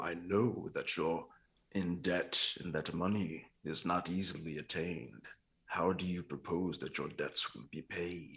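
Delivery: soft, hushed half-whisper with no voice. Playing a conjurer of cheap tricks, speaking to a man in debt; half-whispering. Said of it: "I'll just whisper to him".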